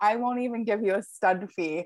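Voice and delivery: ordinary delivery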